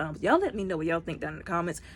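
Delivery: fast, rushed, anxious, nervous chatter. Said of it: "Sorry if I'm talking really fast".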